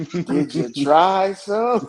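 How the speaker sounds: put-on slow stoned voice. Retelling how someone asked the speaker about drugs, imitating slow dope-head voice. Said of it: "in the slowest dope head voice".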